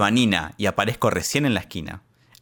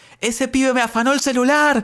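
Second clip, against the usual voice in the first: mock shrill, very high, raised shout; 3 dB louder than usual. Retelling chasing someone down the street: retelling a shout. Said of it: "Y yo empecé a gritar".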